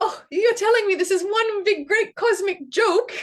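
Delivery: very high, loud hysterical laughing delivery. Retelling a participant's words, imitating someone laughing hysterically. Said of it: "laughing, uh, hysterically and saying".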